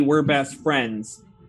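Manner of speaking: ordinary delivery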